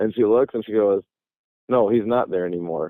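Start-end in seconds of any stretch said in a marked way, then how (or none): 1.7-2.9 put-on super serious, totally straight deadpan delivery. The speaker quotes what a woman said after looking over, retelling a deadpan line. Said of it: "deadpan, like super serious".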